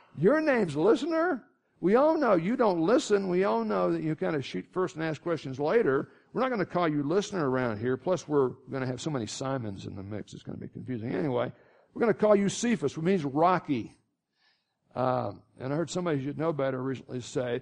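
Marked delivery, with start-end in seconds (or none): none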